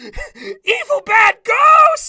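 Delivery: very high, very loud shrieking scream. Retelling a scene where a character reacts to a ghost: imitating a scream.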